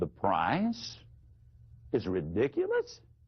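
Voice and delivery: very low voice with rising inflection at the end. Teaching how to repeat the other side's words back to them; lowered voice, rising at end. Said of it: "You lower your voice".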